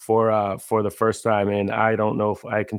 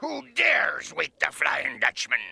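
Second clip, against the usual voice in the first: put-on cartoon ghost voice; 7 semitones higher, 5 dB quieter than usual. Asked for a SpongeBob line, the speaker answers in a Flying Dutchman voice. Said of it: "There's a Flying Dutchman voice".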